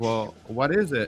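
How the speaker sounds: put-on nervous, anxious voice. Telling a joke, voicing a patient hearing bad news: imitating a nervous patient. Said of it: "Chinese guy gets all nervous".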